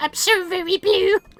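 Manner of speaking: put-on squeaky character voice. Reading game dialogue aloud as Toad, begging for help: Toad's voice. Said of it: "gonna murder my voice with Toad's voice".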